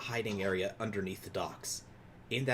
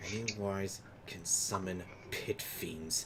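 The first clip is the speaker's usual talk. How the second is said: whispered aside, quieter; 4 dB quieter than usual. Playing a character who whispers a secret into the Baron's ear: whispering in someone's ear. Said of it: "I whisper into".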